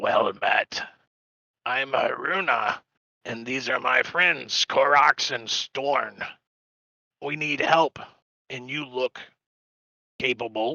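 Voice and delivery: raspy character voice, muffled. A narrator voices a stranger greeting the group through a wool scarf, raspy muffled voice. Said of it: "says through a thick wool scarf in a raspy voice".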